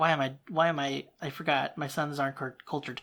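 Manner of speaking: usual speaking voice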